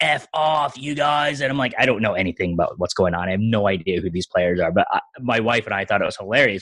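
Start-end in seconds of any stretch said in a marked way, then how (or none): 0.0-1.4 mock very slow, drawn-out, dragged-out yelling. Retelling what a passionate fan behind the speaker screamed at his team: retelling a fan's yelling. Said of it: "Just yelling like about the team".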